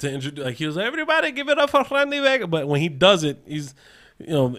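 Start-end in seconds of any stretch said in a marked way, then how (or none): 0.9-2.5 bad fake Spanish accent, higher. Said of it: "he tries to do a Spanish voice".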